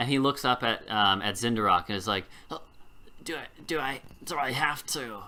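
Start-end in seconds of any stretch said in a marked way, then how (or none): 2.5-5.2 trembling goblin voice, higher, quieter, slower. The goblin looks up at Zindarok and speaks: shaking goblin voice. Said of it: "This goblin is shaking".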